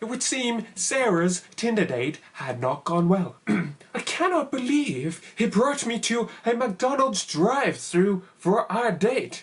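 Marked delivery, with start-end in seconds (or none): 3.5-9.4 put-on American accent, pitched up. Quoting someone's tweet while live-tweeting, in an American accent. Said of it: "Don't know why I did an American accent there".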